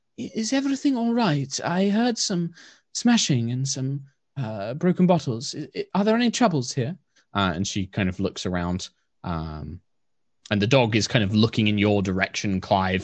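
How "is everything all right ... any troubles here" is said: very soft, gentle, high calling-out voice. A woman emerging with her large dog calls out, in a very soft voice. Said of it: "in a very soft voice kind of calls out".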